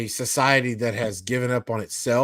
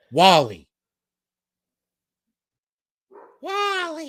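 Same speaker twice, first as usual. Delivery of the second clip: very high, swooping, sing-song, drawn-out little robot voice; 11 semitones higher, 4 dB louder than usual. Arguing over pronunciation, imitating how the little robot says it: imitating how Wall-E says it.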